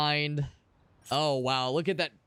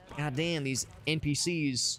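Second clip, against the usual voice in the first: ordinary delivery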